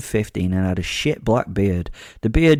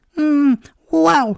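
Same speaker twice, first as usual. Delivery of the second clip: voice jumps way up high, musing tone; 4 dB louder than usual. Reading a story aloud, a hooded figure answering: much more high-pitched voice. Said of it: "in a much more high-pitched voice".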